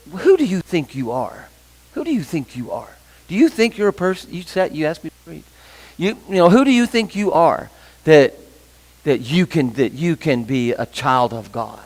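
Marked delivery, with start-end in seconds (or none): 0.1-4.3 mock, put-on whisper. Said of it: "he whispers in your ear".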